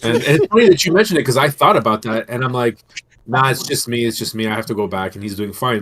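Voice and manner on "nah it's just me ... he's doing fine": ordinary talk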